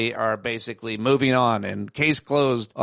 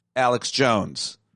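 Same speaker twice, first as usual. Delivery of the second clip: ordinary delivery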